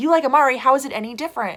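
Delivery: loud, high, indignant, fired back quickly.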